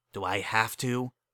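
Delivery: hissing through clenched teeth. He turns to the mocking creature and answers it: hissed through gritted teeth. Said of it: "he hissed through gritted teeth".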